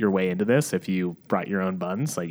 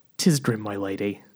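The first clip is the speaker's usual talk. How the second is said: put-on Australian accent. Playing a lord in a scene set in an old London bar: accidental Australian accent. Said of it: "I don't know why this is Australian".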